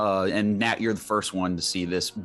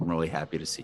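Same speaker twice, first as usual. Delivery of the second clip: hushed, lowered voice; 5 semitones lower, 6 dB quieter than usual. Narrating a character who speaks so only you can hear: lowered voice, not to be overheard. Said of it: "Lower lowers his voice to where he thinks nobody can hear him".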